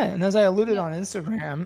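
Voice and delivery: voice cracking. In a conversation about an upcoming surgeon visit, the speaker talks with voice cracking. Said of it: "my voice broke".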